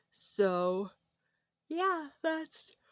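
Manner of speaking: spoken through a yawn. Talking late at night and unable to stop yawning, yawning. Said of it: "I'm yawning".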